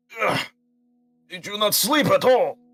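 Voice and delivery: put-on Russian accent. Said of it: "He's Russian".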